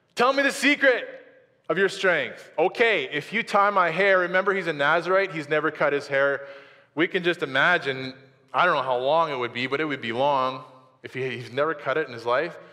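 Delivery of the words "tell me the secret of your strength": very high-pitched, fed-up, annoyed and insistent. Retelling the story, voicing the woman's demand to him: mock-annoyed demand. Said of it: "And now she's really annoyed".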